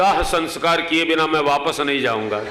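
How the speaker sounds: ordinary talk, nothing marked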